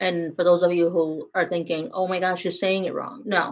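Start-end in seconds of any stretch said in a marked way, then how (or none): none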